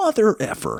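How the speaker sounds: blurted out suddenly, high pitch.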